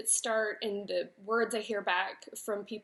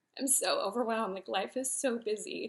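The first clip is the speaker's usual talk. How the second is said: tearful, crying while talking. Recounting a frustrating moment and starting to cry, crying while talking. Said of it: "without crying".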